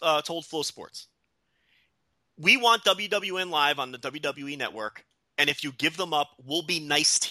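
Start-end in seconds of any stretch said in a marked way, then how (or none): none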